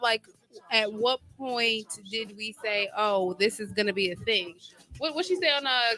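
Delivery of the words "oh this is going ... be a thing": usual speaking voice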